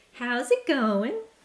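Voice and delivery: high, loud, annoying cartoon girl voice. Explaining which cartoon character she sounds like, imitating a Phineas and Ferb character. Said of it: "there's one of them that she always goes".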